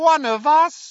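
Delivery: very high, scornful, jeering voice. Narrator reads Voldemort's reply to Harry, Voldemort jeering. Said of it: "jeered Voldemort".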